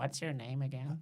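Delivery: hushed, hurried, quick half-whispered aside. Leaning in during an introduction to ask a name: half-whispering in character. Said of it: "lean in for a whisper".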